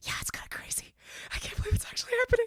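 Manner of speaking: hushed, secretive whisper. Retelling a phone call while glancing back at someone, whispering into the phone. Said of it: "I go into the phone and I whisper like".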